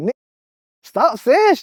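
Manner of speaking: acted, very high, loud, giggling through the words. Retelling how she told him to stop, imitating someone laughing while talking. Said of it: "she laughing like".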